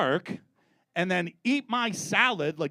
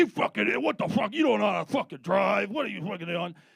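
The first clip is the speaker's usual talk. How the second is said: rough, rapid, mock angry rant; 3 semitones higher than usual. Retelling how a man the speaker nearly hit with a car yelled: retelling a driver yelling. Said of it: "he like just starts yelling at me".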